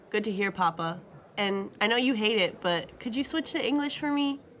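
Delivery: ordinary delivery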